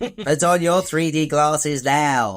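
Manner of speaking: exaggerated cartoon Australian accent. Doing an impression of Dementus addressing Joe, Looney Tunes style. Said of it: "I'm turning him into a, like a Looney Tunes character".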